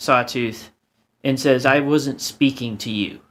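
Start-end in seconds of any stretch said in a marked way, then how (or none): 1.7-3.1 openly angry, very angry tone. A game master voicing Soul Tenebris replies to Sawtooth: angry tone. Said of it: "In a very, like, angry tone".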